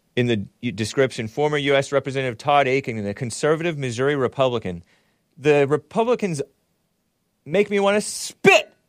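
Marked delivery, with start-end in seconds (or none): 5.4-8.7 heated and worked up, much higher, slower. A show host reading a news description about a Republican, heated. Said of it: "Sorry, I'm all heated".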